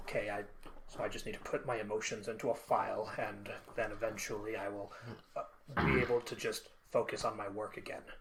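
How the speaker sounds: very low, soft voice. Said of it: "now start with Talbot".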